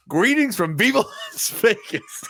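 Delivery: angry delivery. Retelling a favorite line said while angry: imitating angry Ryan. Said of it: "you can tell he's actually angry".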